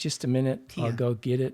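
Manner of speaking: usual speaking voice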